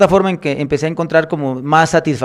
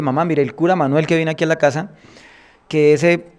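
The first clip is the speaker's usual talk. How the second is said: plain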